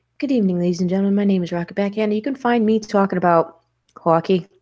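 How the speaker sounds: slid into a put-on Boston accent. Signing off with where listeners can find them, Boston accent. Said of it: "we're already sliding into it".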